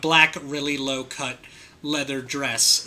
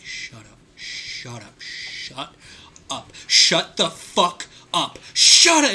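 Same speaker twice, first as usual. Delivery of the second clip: slow, drawn-out, restrained, deliberate insistent delivery; 3 semitones higher, 5 dB louder than usual. Recalling how Austin reacted to a terrible pun, imitating Austin saying it very quietly. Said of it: "starting very quietly as he was just like".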